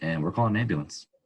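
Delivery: ordinary talk, nothing marked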